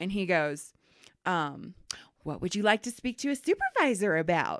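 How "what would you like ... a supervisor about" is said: play-acted, saccharine, sickeningly sweet, syrupy politeness. Retelling a man's reply to a woman who asked for a supervisor, mocking a sickeningly sweet tone. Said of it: "In this, like, sickeningly sweet tone".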